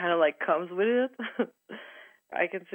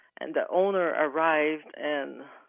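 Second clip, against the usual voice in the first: ordinary talk, nothing marked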